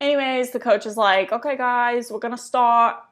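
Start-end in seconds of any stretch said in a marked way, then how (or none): 1.3-2.9 put-on Australian accent. Retelling what the basketball coach said to the players, in an australian accent. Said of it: "In an Australian accent".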